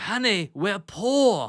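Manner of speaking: playful, stretched "poor". Retelling a friend's funny impression of a movie scene: Dudley Moore impression.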